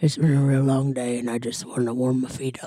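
huge, puffing, winded, drooly hippo character voice. Voicing a hippo character in an 850-pound hippo voice. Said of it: "a voice of a, a 850 pound hippo".

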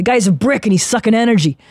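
put-on man's voice with a New York accent. Repeating what he said after he stopped the meeting, do a Mike Maliani impression, New York accent. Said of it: "he had the great this great New York accent".

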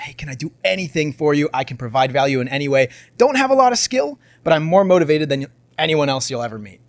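ordinary talk

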